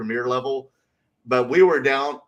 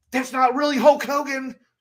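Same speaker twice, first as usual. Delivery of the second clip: put-on angry man voice, higher pitch; 13 semitones higher than usual. Retelling a man getting mad at them over cosplayers: imitating an angry man. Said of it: "this man was just getting really mad at us".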